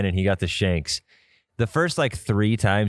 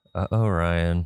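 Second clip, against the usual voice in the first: put-on, just-audible under-breath mutter, much lower; 3 semitones lower than usual. Showing what they say as the listener's shot heads toward water, imitating a just-audible mutter. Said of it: "just loud enough for you to hear".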